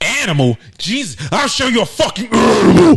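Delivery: shrill, high, very loud, drawn-out growled voice. Retelling a furious woman's reply on a phone call: imitating a woman growling. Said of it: "like, growling and shit".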